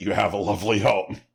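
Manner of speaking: put-on snide, condescending old lady voice, Southern accent. Explaining a Southern old-lady saying, mock-snide old lady. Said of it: "they say it in a tone that conveys you ain't got shit".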